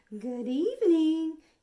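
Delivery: high, smooth, silky voice, booming very loud. Narrating a monster introducing himself at the bedside: high, silky voice. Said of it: "he said in a high, silky voice".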